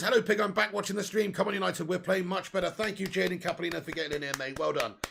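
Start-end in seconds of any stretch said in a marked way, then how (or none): none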